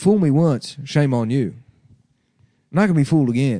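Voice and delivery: put-on Texas accent. Trying to do a George W. Bush impression: George W. Bush impression. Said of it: "I could do a W impression".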